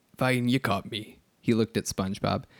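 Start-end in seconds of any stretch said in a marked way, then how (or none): 0.2-1.2 put-on sailor voice with Scottish accent. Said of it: "your Mister Krabs is Scottish".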